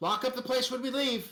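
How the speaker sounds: loud, high-pitched yell, calling out across room. Voicing a character calling out an order while leaving: yelling. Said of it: "she yells out loud".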